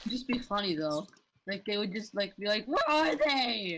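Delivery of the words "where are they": little crack in the voice. Joking with teammates about a tournament without guns, voice cracking. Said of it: "I like the nice little voice crack you added in there".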